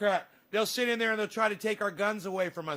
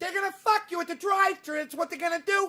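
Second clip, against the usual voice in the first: fake Italian accent, pitched higher; 9 semitones higher, 3 dB louder than usual. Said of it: "Me talking like I'm Italian".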